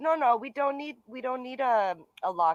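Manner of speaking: put-on man with French accent. Retelling what the man at the door said: imitating a French accent. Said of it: "he's French accent".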